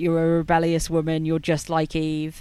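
normal talking voice

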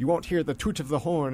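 badly done, put-on radio advertisement voice. Speaker recalls a childhood radio ad for Aruba, attempted Aruba-ad accent. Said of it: "and I can't do the accent".

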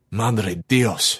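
mumbled, muttered under the breath. George opens the front door and a body sags forward; he mutters. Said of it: "George muttered".

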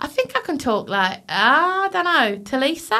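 put-on Australian accent. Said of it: "that's like Australian".

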